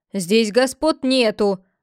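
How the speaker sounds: sharp, snapping retort. The theatre owner rebuffs a plea for mercy, snapping. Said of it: "Огрызнулся хозяин театра".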